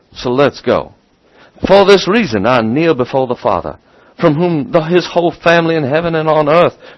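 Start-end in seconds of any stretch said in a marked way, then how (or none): 1.7-6.7 put-on Southern American accent, pitched up. Reading a text aloud after saying it works better, in a Southern accent. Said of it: "I can do it in Southern so much better".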